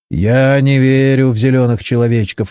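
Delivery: ordinary delivery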